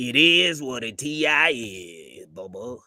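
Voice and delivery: very slow drawl, every word dragged, heavy stress on "is". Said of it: "he talked like this".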